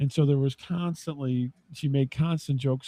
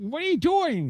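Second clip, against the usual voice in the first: squeezed-up, high, odd-sounding voice; 12 semitones higher than usual. Describing a man who talked like Buddy Hackett, the speaker does a Buddy Hackett impersonation. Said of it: "This is my Buddy Hackett impersonation".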